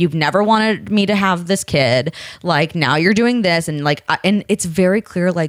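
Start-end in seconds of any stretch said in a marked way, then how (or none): none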